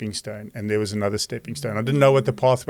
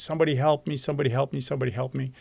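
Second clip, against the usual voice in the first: pleading, mild cries, over and over; 4 semitones higher, 3 dB quieter than usual. Telling a joke about a man hanging from a branch off a cliff, retelling his scream for help. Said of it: "and he's screaming".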